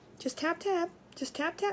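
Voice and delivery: easy, unbothered tone. Retelling a dog class, imitating the instructor: imitating a calm instructor. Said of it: "Real calm".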